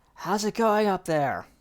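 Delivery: loud, calling shout. The captain looks up and calls to the one above: shouting up from below. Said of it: "Captain looks up and shouts".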